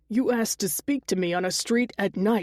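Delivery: plain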